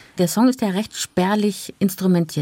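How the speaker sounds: ordinary delivery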